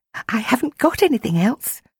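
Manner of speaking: whisper holding back laughter. A girl whispers to the ducklings, trying not to laugh out loud. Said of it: "she whispered".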